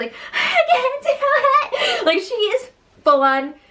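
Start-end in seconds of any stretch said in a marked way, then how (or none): 0.3-2.1 high, slow, shouted, panicked crying wail. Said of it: "she's still freaking out".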